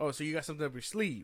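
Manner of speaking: condescending, patronizing tone. Retelling what the interviewer asked her, imitating a condescending interviewer. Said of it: "It sounds so condescending".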